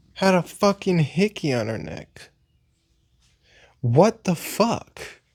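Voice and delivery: angry. Ranting to the viewers about a coworker's hickey: angry. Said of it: "I'm so fucking mad right now".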